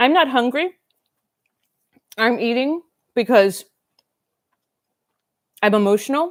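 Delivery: speaking with mouth full of food. Speaker talks to the audience while eating, talking with mouth full. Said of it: "I'm totally gonna talk with food in my mouth".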